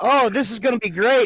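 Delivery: put-on eager kid voice. Acting out a kid about to taste rotted shark: imitating an eager kid. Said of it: "the kid is like".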